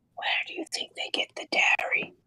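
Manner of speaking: hushed, unvoiced whisper with no voice. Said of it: "I'm gonna whisper to Fallon".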